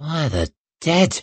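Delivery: jittery muttering. A warrior steps back at the sight of her, muttering nervously. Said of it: "muttered Greenway, taking a nervy step back".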